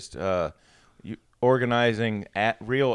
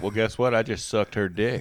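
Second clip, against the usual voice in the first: normal talking voice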